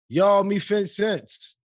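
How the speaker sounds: very high, very slow, drawn-out yell. Calling to someone across the street: yelled. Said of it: "So you gotta yell it".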